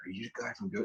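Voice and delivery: acted-out whisper. Speaker recalls an older man approaching in line, retelling a whisper. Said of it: "Like he's whispering".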